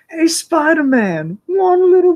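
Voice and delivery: cartoon goblin villain voice, very high, slow, drawn out. Speaker imagines a new villain voice for the show, in a Harry Osborn Goblin voice. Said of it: "Harry Osborn's like new Goblin voice".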